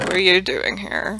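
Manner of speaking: snooty, judging tone with a rising pitch. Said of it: "just staring at you like".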